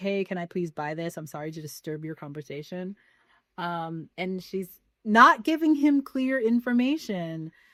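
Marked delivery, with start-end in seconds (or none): 0.0-2.9 very nervous, soft, rushed, non-confrontational voice. Retelling a customer asking a clerk on her phone to buy something, imitating a nervous voice. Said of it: "very nervous, very non-confrontational".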